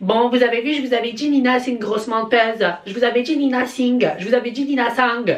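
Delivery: put-on heavy southern French accent. Imitating hypocritical TikTokers gloating about a woman: southern French accent. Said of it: "pourquoi je prends l'accent du Sud ?".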